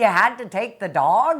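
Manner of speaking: screaming at full volume. Retelling standing on the back porch after his dog died, retelling a scream at the heavens. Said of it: "I'm screaming at the heavens".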